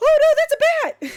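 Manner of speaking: very high, loud, panicked, freaked-out wail. Retelling the mother seeing a bat photo: imitating a panicking mother. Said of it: "she started freaking out".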